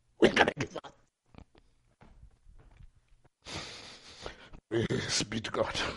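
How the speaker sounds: soft, breathy whisper, a little emotional. Speaking to listeners and giving praise to god, a bit emotional. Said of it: "I'm a bit emotional".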